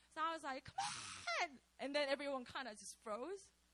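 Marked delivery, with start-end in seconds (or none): 0.7-1.5 very high, pitched-up screaming outburst. Retelling how she got up and screamed at everyone, imitating her own scream. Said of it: "I just screamed".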